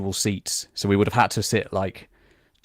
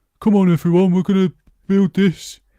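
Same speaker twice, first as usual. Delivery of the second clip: put-on very high-pitched Birmingham accent; 11 semitones higher, 7 dB louder than usual. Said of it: "I'm allowed to do the accent".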